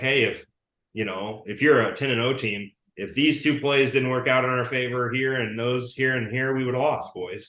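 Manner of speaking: usual speaking voice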